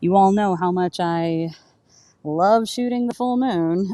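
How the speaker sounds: sarcastic, slowing on the last words.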